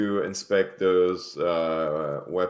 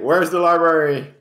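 loud high-pitched voice. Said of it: "just asking, like".

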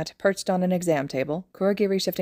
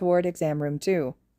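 plain

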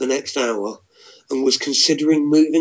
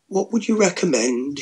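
tentative, hesitant, much higher; 5 semitones higher than usual. A man answers a woman's flirting, asking tentatively. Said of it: "he asked tentatively".

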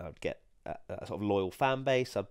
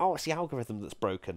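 scornful, mocking send-up voice; 3 semitones higher than usual. Giving advice about growing on YouTube, mimicking others in the Twitter voice. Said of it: "I'm doing the Twitter voice again".

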